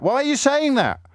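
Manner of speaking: put-on outrage. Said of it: "I'm not upset".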